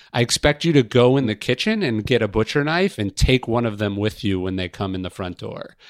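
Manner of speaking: usual speaking voice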